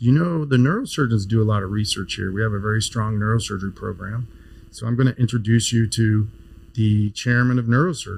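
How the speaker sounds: ordinary talk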